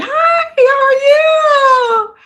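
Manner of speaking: very high, slow, drawn-out eager delivery. Retelling greeting a senator's wife who worked with her, imitating an eager greeting. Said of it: "like so like eager".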